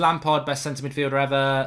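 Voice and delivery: ordinary talk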